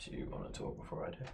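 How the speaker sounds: hushed whisper, in character. Speaking in character to another speaker, whispering in character. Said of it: "Are you whispering that in character?".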